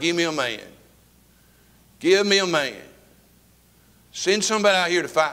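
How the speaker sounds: acted-out shouting. Retelling the giant's challenge to the frightened army in the caves: acting out crying out a challenge. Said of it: "He's crying".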